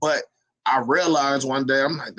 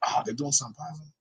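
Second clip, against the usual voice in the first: mock whisper, quieter; 8 dB quieter than usual. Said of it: "they whisper the positives".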